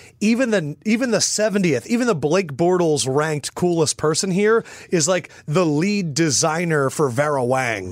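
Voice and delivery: ordinary talk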